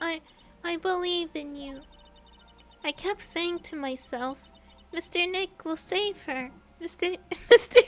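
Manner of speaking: very high, loud put-on child voice. Reading a game character's lines aloud: put-on kid character voice. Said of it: "I can't take myself seriously with this freaking voice".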